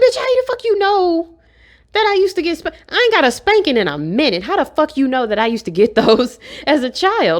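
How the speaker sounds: put-on stunned, disbelieving, shocked, swooping pitch. Retelling to friends how you once reacted in disbelief to a stranger's reading of you, imitating your own shocked reaction. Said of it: "I was just so shocked".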